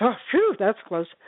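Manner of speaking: acted laughing, words broken up by laughter. Telling a joke about a relieved burglar: imitating someone laughing while talking. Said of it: "he starts laughing".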